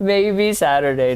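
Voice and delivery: high, loud, laughing delivery.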